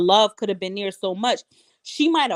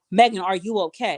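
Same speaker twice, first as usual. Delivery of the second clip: mock unafraid, calm, steady, matter-of-fact tone. Quoting what she asked Megan, in a mock matter-of-fact, unafraid tone. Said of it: "her tone to me was of confirmation. ... it was very matter of fact".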